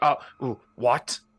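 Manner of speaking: loud, baffled, caught-off-guard, flummoxed outburst. Voicing an officer caught off guard by an order: flummoxed officer. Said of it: "he's just flummoxed".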